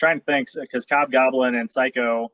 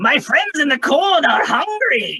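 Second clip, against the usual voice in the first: shrill, loud, pitched-up, swooping character voice; 14 semitones higher, 6 dB louder than usual. A performer finally finds a character's voice after struggling: Cop Goblin voice. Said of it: "That's the voice".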